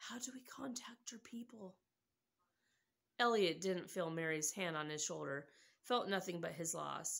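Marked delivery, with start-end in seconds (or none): 0.0-1.8 hushed, very quiet, barely audible whisper. A man leans in beside the extraterrestrial and asks, whispered. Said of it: "leaned in beside the extraterrestrial and whispered".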